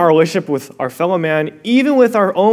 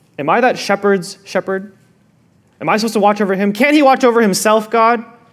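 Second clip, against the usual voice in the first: ordinary delivery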